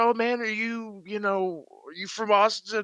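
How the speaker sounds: friendly, high, eager homeless man voice.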